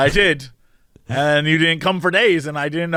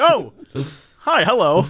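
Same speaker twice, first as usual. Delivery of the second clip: startled, surprised, caught-off-guard tone. Mimicking the other speaker's greeting as if just walking in: imitating a surprised greeting. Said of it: "it sounded like you just walked into the room".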